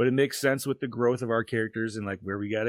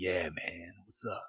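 very soft, deep, hushed cat voice; 4 semitones lower, 9 dB quieter than usual. Describing Instagram cat videos, the speaker voices a cat; deep cat voice. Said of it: "deep cat voice".

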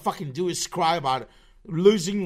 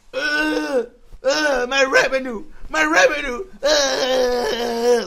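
very slow, high, whiny fake crying and blubbering; 8 semitones higher, 7 dB louder than usual. Mocking someone upset over a copyright claim: mock crying. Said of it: "you're crying like".

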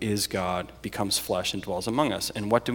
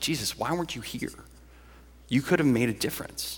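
quiet, pointed, accusing tone; 4 semitones higher, 4 dB quieter than usual. Showing how Martha's words to Jesus might sound as an accusation: accusing. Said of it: "Is it an accusation?".

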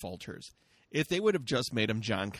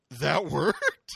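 loud, mock stunned, startled disbelief; 3 semitones higher, 6 dB louder than usual. Retelling a moment when Paul is surprised it worked: imitating Paul sounding surprised. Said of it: "Paul is straight up surprised it worked".

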